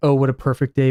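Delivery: ordinary talk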